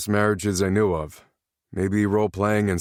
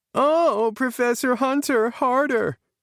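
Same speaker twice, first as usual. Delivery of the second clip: very high voice with words stretched out. Narrator reads Rob's line to James, high-pitched Penny mimicry. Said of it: "Rob said in a high-pitched voice".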